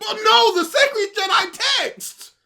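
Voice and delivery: shrill, booming, very high, loud drawn-out protesting cry. Retelling a movie scene, doing Luke's protest. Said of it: "And he goes".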